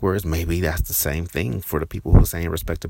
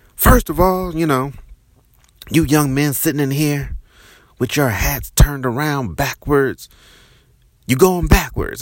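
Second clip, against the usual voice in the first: acted, angry, high, shouting drill-sergeant voice; 9 semitones higher than usual. Retelling how a new arrival lectured a room of young men, doing his voice as an imitation of a yelling drill instructor. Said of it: "he starts yelling at us".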